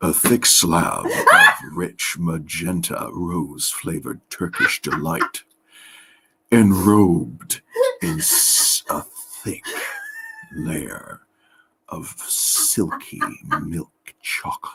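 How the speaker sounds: slowly and seductively. Asked by the other speaker to say it slowly and seductively. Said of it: "say it slowly, seductively".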